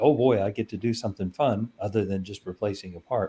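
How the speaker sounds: ordinary delivery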